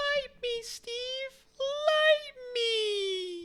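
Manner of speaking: tiny, very high-pitched, drawn-out crying voice. Voicing a little match that begs to be lit: little match crying. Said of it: "the little match crying".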